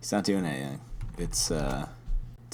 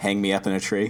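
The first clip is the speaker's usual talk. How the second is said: usual speaking voice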